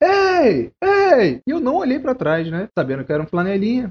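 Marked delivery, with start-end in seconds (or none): 0.0-1.4 play-acted, very high-pitched yell. Retelling a man shouting at them after they parked, reenacting a man yelling. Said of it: "um senhor começa a gritar".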